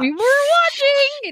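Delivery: shrill, heated, very high-pitched delivery. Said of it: "five octaves up in thirty seconds".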